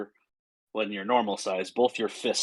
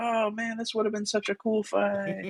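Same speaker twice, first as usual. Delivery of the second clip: tiny, small, very high-pitched little voice; 11 semitones higher than usual. Voicing a hidden spirit heard only by one player: little voice. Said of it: "a little voice that probably only you could hear go".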